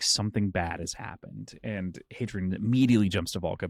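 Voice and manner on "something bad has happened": soft, hushed whispered words. Recapping a story scene to a co-host, retelling Krim's whisper. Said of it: "he kind of whispers in".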